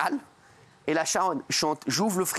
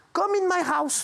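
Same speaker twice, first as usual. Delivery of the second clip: put-on small, high-pitched, perched little voice. Retelling inviting a woman home after she said she was alone, in a put-on little high voice. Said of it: "Avec cette voix-là".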